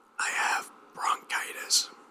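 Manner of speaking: very hoarse, croaking whispered rasp. Retelling what the supervisor said when asked why he wasn't talking, imitating a very hoarse voice. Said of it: "in a very hoarse voice".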